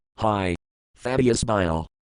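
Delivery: plain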